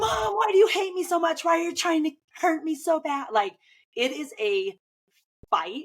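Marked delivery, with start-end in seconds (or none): 0.0-3.3 put-on very high, shrieking, whining, wailing child voice. Retelling how a daughter screams while her hair is brushed: imitating a screaming child. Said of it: "she screams".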